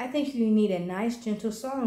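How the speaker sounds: usual speaking voice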